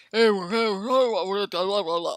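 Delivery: forced low caveman-like man's voice, "blah" drawn out. Mocking how a woman tries to talk in a man's voice. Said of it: "woman tries to talk in the man's voice".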